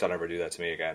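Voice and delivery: put-on flat delivery. Retelling a scene where an actress answers an awkward high five, retelling a deadpan reply. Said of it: "Sigourney Weaver deadpan".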